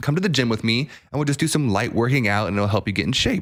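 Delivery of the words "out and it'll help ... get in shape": normal talking voice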